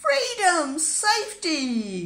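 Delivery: joyful, high, loud happy cry. Having crossed the bridge hand in hand, a pig cries happily. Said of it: "Cried Pigling happily".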